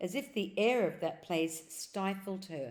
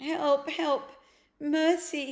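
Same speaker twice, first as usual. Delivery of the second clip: faint, weak, pitched-up cry; 8 semitones higher, 6 dB louder than usual. A narrator reads the witch's words as she staggers after them: faint voice. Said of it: "said the witch in a faint voice".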